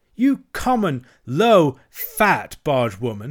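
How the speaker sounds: furious, loud, angry shouted outburst. Narrating a toad whose temper boils over at a bargewoman, shouting. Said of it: "he shouted".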